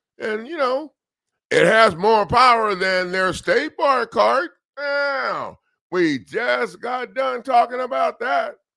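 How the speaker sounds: agitated, heated rant. Speaking to listeners, getting worked up. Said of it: "I'm getting worked up again".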